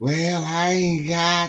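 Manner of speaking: mock very slow, drawn-out, sad pleading voice. Speaker quoting his mother asking for money, imitating mother's sad voice. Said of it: "she give you that sad voice".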